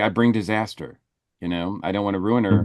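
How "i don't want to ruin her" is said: normal talking voice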